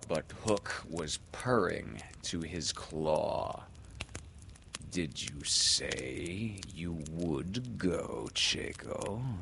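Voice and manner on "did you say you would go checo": slow, idle, musing, wondering aloud. Hook puts a question to Checo, musing. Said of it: "he said musingly".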